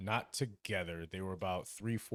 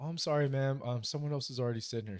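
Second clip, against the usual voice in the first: play-acted, very polite, nicely spoken, pitched-up voice; 5 semitones higher than usual. Retelling how the bartender told a customer a seat was taken: imitating Brenda speaking very nicely. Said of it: "she says very nicely".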